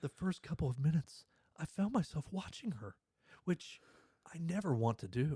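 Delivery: theatrical, exaggerated, drama-heavy reading. Reading a competitor's quote aloud, putting drama in it: dramatic reading. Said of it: "I'm gonna put some drama in it".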